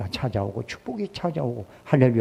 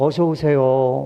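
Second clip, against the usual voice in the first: louder put-on voice like a nightingale; 5 dB louder than usual. Retell how your wife usually greets you when you come home, imitating a wife's nightingale-like voice. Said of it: "꾀꼬리 같은 목소리로".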